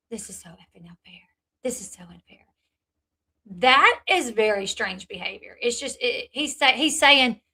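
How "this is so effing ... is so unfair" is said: very quiet, upset whisper under the breath. Retelling someone on a live turning the camera away: imitating someone whispering. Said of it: "you start whispering".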